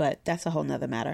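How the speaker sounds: talking really fast, rattled off.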